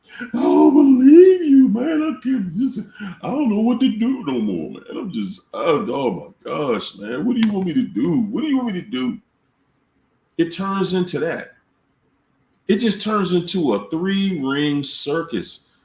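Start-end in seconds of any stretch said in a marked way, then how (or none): 0.2-9.1 mock tearful, high, crying, pleading breakdown. Speaker acts out an informant alone with you in the car, imitating a narc crying. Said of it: "the narcs start crying on you".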